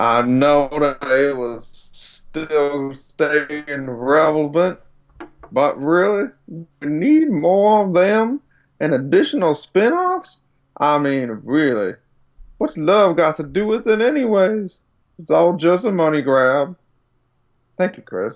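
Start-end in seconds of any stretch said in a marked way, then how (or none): 0.0-16.8 slow put-on Western cowboy drawl. Reading out what he says, the speaker gives him a cowboy voice. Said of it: "I'm gonna give him like a cowboy voice".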